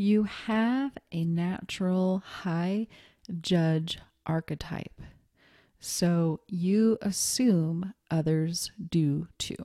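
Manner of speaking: drawn-out, very slow, deliberate delivery. Explaining the last reason to listeners, said really slowly. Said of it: "I said that really slowly".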